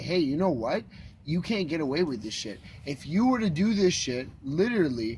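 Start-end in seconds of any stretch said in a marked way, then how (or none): none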